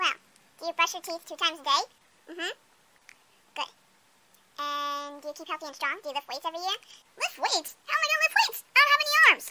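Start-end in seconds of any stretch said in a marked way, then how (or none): 7.2-9.5 high, rapid-fire, breakneck chatter rattled off. A baby character replies to another character's question, talking very fast. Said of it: "He's talking pretty fast".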